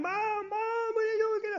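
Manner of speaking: very high, frantic, long drawn-out, rising panicked calls. Retelling a son calling to his choking mother, imitating a voice rising higher. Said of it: "I heard his voice get higher and higher".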